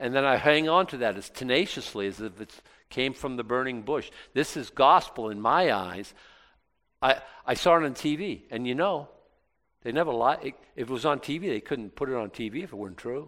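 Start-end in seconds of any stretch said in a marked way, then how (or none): none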